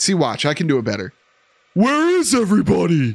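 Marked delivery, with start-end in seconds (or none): 1.7-3.1 pitched-up, high cartoon character voice. Repeating a game line after saying they can do it better: Patrick Star impression. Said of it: "Best Patrick you've ever heard anyone do".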